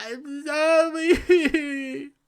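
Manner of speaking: mock very high, whiny, blubbering crying. Mocking someone who profited from the project and then apologized: mock whining and crying. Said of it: "whining and crying, saying".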